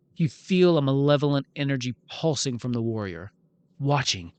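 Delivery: plain reading voice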